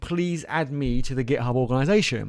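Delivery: ordinary talk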